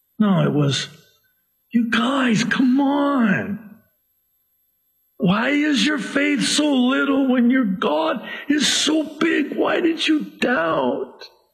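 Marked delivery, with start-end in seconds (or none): 1.7-11.3 very high, loving, compassionate, caring tone. Retelling what he said to them, acting out compassionate words. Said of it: "with a compassion and a love and a care in the tone of his voice".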